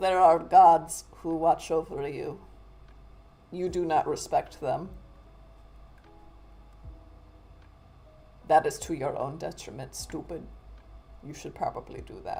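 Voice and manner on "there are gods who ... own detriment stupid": put-on Russian accent. Voicing what the little old lady should say: Sienna's Russian accent. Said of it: "now I just have a Sienna accent, which I guess is a Russian accent".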